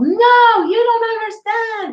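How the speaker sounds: mock, very high, slow, drawn-out shrill shout. Retelling how a crying woman finally answered: imitating a woman yelling. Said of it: "she yelled".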